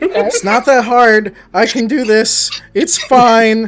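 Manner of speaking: very loud, high-pitched speech. Blaze pacing outside the Downburst Inn, very loud self-talk. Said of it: "talking, like, very loudly".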